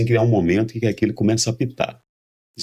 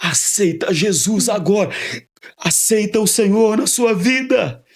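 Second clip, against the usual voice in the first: shrill shouted call, pitched very high; 11 semitones higher than usual. Retelling how a doctor shouts at a dying patient: imitating a doctor shouting. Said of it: "E ele grita".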